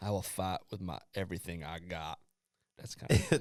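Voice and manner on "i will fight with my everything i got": put-on drawl, quieter. Quoting a player after he got drafted, Forrest Gump impression. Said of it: "That was like a Forrest Gump impression".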